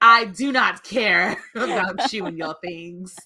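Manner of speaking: hard-edged, tough-sounding voice, acted out. Mocking how the other speaker just sounded: imitating someone sounding hard. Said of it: "You're like".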